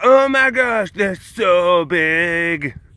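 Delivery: high, drawn-out gushing squeal. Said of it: "they're like".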